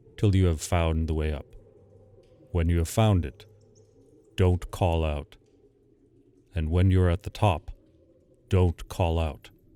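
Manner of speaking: peculiar, strange, odd low-pitched voice. A narrator voices a man speaking to him at the door, in a peculiar low voice. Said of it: "he said in his peculiar low voice".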